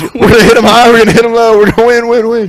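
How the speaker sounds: very high, loud, rousing rallying delivery. Retelling a famous speech from a Notre Dame coach: Rudy impression. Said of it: "He goes".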